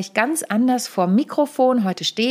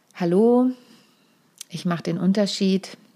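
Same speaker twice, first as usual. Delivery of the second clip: flat, unconvinced monotone without any conviction; 2 semitones lower than usual. Presentation coaching counterexample of introducing yourself: flat, unconvinced delivery. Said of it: "Ich gebe dir nochmal das Gegenbeispiel".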